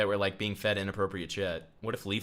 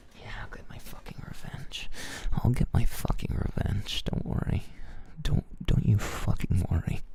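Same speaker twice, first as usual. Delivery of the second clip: acted, seething, hushed whisper. Mocking another speaker who hides anger at friends: imitating someone vowing revenge. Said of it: "and you're like".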